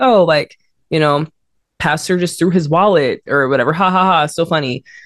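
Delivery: ordinary delivery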